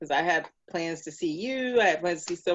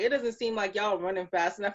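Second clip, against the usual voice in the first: usual speaking voice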